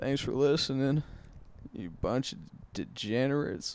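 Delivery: put-on slight Southern accent. Signing off a comedy podcast to listeners: little southern drawl. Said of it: "that little southern draw".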